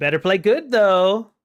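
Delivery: high, loud cackling through the words, taunting. Voicing a woman at the tavern warning a player character: cackling. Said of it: "she just kinda cackles as she says that".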